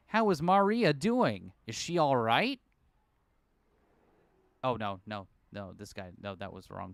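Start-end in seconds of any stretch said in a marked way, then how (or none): 0.1-2.5 put-on thick American accent, loud and slow. Narrator reading a story voices the lecturer's worried question: Leland Palmer in thick American accent. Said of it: "I'm gonna give this guy like a thick American".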